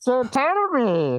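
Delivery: squeaky, very high, botched masked movie-villain voice. Testing a voice during a chat about AI copying voices, in a Bane voice. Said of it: "that was Bane".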